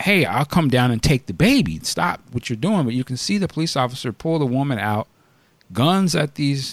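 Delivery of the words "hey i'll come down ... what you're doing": plain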